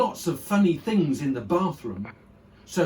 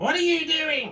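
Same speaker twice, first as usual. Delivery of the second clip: piercing, shrill, very high voice; 12 semitones higher than usual. Reading aloud, the narrator voices Grandma calling to George from the next room, shrill. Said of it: "came the shrill voice".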